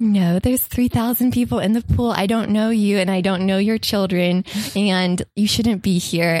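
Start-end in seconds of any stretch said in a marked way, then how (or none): none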